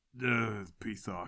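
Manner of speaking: barely audible, very quiet monster mumble. Narrating a fight, voicing the Minotaur with the staff, in a mumbling Minotaur voice. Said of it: "The Minotaur with the staff mumbles".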